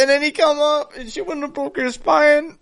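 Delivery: high-pitched wail, close to tears. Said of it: "this man's about to cry".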